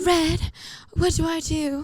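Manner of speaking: put-on very slow, old-South Southern belle accent. Retelling a Gone with the Wind scene: Gone with the Wind Southern belle. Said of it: "She's a Southern belle now".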